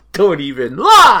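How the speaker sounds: shrill, very high, very loud shout. Accusing a friend of always wanting their blood: yelling. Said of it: "Sorry for yelling".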